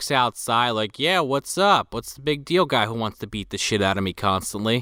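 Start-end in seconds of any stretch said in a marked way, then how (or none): 1.0-4.8 casual offhand tone, lower. Retelling a guy walking outside to answer: imitating a casual tone. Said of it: "so casually".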